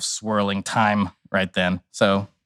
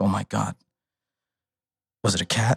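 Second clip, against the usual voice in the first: mock weepy voice breaking into tears; 3 dB quieter than usual. Retelling a tripping companion's reaction on acid: imitating him crying. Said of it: "he just immediately starts crying".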